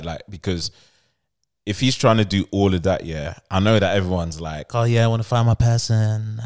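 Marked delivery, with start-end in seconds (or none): 4.7-6.4 put-on voice of a girl. Retelling what everyone says about finding a partner: imitating a girl's voice. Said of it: "did the girl's voice".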